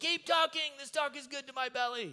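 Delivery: shrill, very high, loud approving yell. Retelling how listeners yell during teaching: imitating listeners yelling approval. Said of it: "they'll yell".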